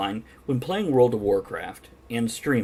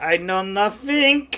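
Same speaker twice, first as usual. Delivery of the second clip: stock put-on German accent. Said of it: "I guess it's a German accent, but it's not the".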